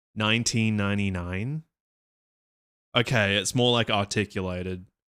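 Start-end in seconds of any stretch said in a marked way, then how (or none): 0.2-1.7 American-accented pronunciation. Discussing a thread mocking australian accents, in an american accent. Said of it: "say this in an American accent?".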